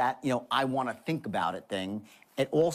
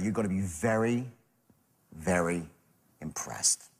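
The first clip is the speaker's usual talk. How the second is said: low, slow, completely earnest and heartfelt; 5 semitones lower than usual. Demonstrating a tonal pattern for closing to the program's people, with utter sincerity. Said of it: "utter sincerity".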